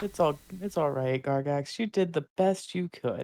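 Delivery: backhanded, passive-aggressive manner. Reassuring gargax after a failed language lesson: passive-aggressive tone. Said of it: "Very passive-aggressive tones of voice".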